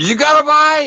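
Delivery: very high, shrill, loud yell. Explaining a posted video clip about a bite, retelling Chris Elselton's yell. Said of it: "yelling like".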